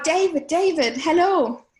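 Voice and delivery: put-on loud calling out. Retelling spotting someone at a flea market: imitating calling out a greeting. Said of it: "I sort of cried out".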